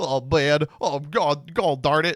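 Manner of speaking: whiny, slow, drawn-out complaining. Mocking another player during a card game: imitating Gage whining. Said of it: "I don't sound like that".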